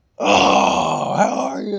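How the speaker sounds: slow, creaky, loud, drawn-out voice. Retelling meeting him at the airport, imitating Brian Baldinger's voice. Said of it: "you just did his voice pretty well right there".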